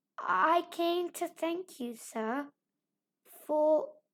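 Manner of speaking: very slow, faintly trembling, drawn-out, slight quaver. A girl holds out her hand to thank Mister Lawrence: small quaver in voice. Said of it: "with only a small quaver in her voice".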